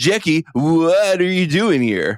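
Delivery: put-on Californian voice, high-pitched and swooping. Joking about how the other speaker says a name: Fred Armisen Californians voice. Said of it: "you are in the Fred Armisen S N L skit, The Californian".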